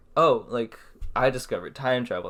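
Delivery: ordinary talk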